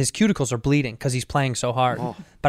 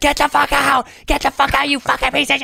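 mock screaming, much higher; 12 semitones higher, 4 dB louder than usual. Retelling how her roommate woke him up, retelling a scream. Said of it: "her roommate screaming at me".

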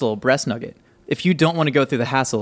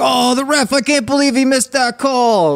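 put-on overdone made-up Jersey accent, very high-pitched; 12 semitones higher, 4 dB louder than usual. Describing guys eating wings and yelling at the ref, exaggerated Jersey accent. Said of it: "that doesn't exist with that accent".

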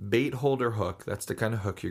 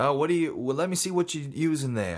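put-on heavy Australian accent, laid on thick, pitched up; 5 semitones higher than usual. Retelling what a fellow who showed up while fishing said, thick australian accent. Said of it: "had a really thick accent".

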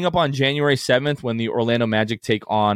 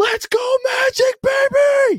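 very high, very slow, drawn-out cheering bellow; 4 dB louder than usual. Retelling yelling out the car window while driving past kids, a top-of-lungs yell. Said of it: "I just yell at the top of my lungs".

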